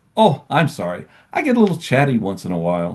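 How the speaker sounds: sing-song smart-speaker voice assistant voice. Retelling Alexa's reply after being told to shut up: imitating Alexa. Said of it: "she'll say back to me".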